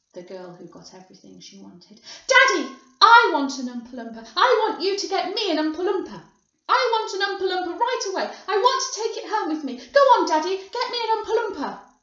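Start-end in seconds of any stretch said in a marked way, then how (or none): 2.2-11.7 very loud, shrill, insistent, spoiled, demanding shout. Narrating a story, a girl shouts to her father: Veruca Salt shouting. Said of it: "shouted Veruca Salt".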